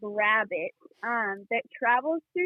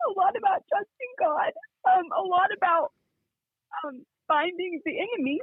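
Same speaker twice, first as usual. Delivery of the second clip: teary, pitched-up voice on the verge of crying; 7 semitones higher than usual. Speaker talking about lessons learned, on the verge of tears. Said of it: "wow, I'm going to cry".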